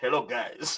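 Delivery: Malayan accent. Reading a viewer's comment aloud: Malayan accent. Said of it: "I read Ovi's comment with a Malayan accent".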